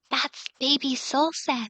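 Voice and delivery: soft whisper right in the ear. A woman speaks into the player character's ear, whispering. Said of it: "She just kind of like whispers in your ear and she goes".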